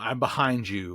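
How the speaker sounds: low, soft, eerie, echoing, menacing creepy voice. Describing a demon that talks with a kid's voice, in an echoey creepy voice. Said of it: "in that echoey, creepy voice".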